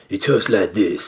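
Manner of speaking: put-on tough guy voice. Mocking an actor's annoying voice: Dane DeHaan impression. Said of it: "like he's putting on a tough guy voice".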